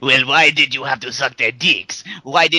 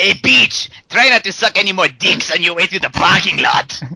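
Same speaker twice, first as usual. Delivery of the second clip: yelling, pitched high; 5 semitones higher, 3 dB louder than usual. Reading a script aloud, Dante swings the door open after her: yelling out. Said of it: "he swings the door open and yells out".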